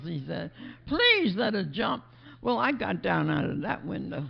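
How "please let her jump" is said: slow, mock pleading tone. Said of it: "he's pleading with her".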